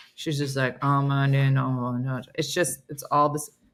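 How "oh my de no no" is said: slow, flat monotone that never rises. Imitating a Duolingo girl whose voice never goes up: flat voice that never rises. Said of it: "her voice never goes up".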